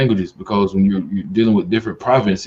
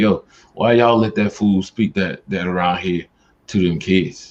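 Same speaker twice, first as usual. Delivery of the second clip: ordinary talk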